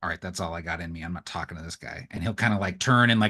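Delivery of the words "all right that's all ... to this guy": very quiet, low grumbling mutter under the breath. Speaking in character as a stranger approaches, muttering under his breath. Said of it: "Lox will just say under his breath".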